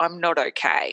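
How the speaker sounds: ordinary talk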